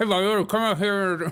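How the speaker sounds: talking around a cigarette. Retelling how auto mechanics talked with cigarettes at their lip: imitating a mechanic talking with cigarette in lip. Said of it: "at the bottom of their lip".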